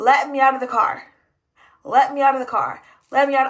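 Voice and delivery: loud, annoyed, pissed-off, insistent, repeated. Retelling demanding to be let out of the car: retelling getting pissed off. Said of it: "I'm getting pissed off at this point".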